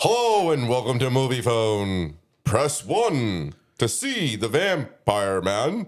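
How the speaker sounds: recorded phone-menu style, distinctive movie announcer voice. Friends take turns recalling a distinctive phone-line voice, doing the Moviefone announcer voice. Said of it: "his voice was very distinctive".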